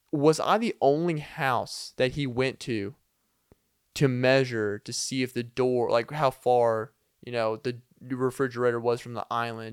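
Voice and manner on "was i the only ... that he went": usual speaking voice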